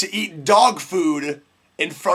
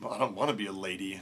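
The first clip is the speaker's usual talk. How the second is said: mock under-breath mutter, lower and quieter; 10 semitones lower, 13 dB quieter than usual. Retelling a girl answering her dad, imitating her muttering under her breath. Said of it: "under her breath was like".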